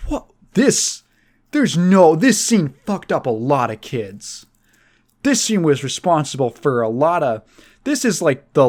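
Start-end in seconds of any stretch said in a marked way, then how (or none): none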